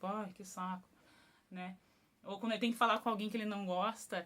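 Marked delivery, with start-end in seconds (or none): 0.1-0.9 put-on fed-up voice, quieter. Imitating a character who is always scowling: imitating fed-up Patrício. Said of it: "sempre com uma cara de cu".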